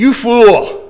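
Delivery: calling out in full voice. Retelling walking into the kitchen and trying a new word on Mom: retelling saying it loudly. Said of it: "in a loud voice, tried it out".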